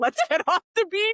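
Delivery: very high, loud, frantic panicked cry. Retelling own words while fleeing a sandstorm: imitating own panicked words. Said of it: "I was in a panic and was like".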